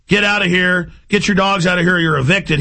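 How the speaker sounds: normal talking voice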